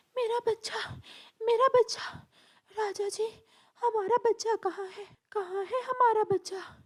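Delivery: distraught, upset, high, anxious cry of distress. The queen parrot wakes and asks the king about their child, upset and anxious. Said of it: "[name] और [name] परेशान हो जाते हैं। / रानी की आंखों में आंसू थे, / [name] और [name] परेशान हो जाते हैं।".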